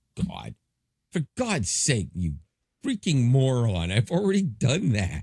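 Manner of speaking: furious, fed-up angry yell, climbing in pitch. Recounting asking an AI for help, he retells yelling at Gemini. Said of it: "I'm like yelling at it and everything".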